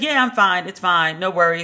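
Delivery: plain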